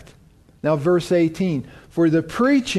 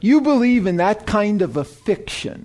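scornful, derogatory, belittling mocking tone; 2 semitones higher than usual. Quoting a man who puts questions to believers: mimicking a derogatory tone. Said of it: "it's just the way he says it".

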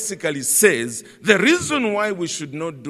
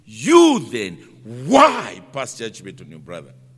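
strong emphasis on the word you; 7 semitones lower, 4 dB louder than usual. Rereading the same question with different emphasis: stress on you. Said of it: "the emphasis is on the word you".

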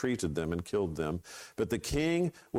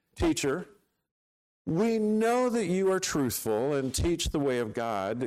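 high, loud sarcastic flattering tone. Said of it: "Can you just hear the sarcasm".

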